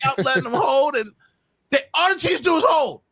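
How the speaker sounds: high, heated, loud yelling. Speaker complains that the chiefs hold on every play: yelling. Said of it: "Sorry for yelling".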